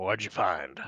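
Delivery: very loud, deep, rough-edged gruff growl. Retelling what Oscar asked, in his voice: Oscar's gruff voice. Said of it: "in a gruff voice".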